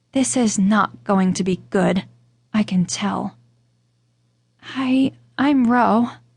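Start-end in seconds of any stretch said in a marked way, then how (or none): 4.6-6.0 barely a whisper, very faint. Reading a story, the narrator introduces herself timidly: barely a whisper. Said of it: "my voice barely a whisper".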